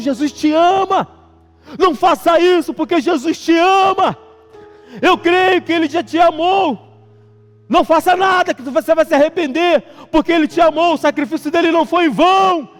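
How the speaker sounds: put-on woman's voice, shouted, pleading. Recounting a woman who shouted one morning, imitating her shouting. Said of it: "E ela gritava ao mesmo tempo".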